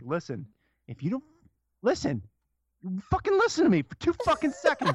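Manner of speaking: put-on furious rant, very high, shrill, swooping. Acting out an angry video intro to viewers: acting super pissed. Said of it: "Just super pissed".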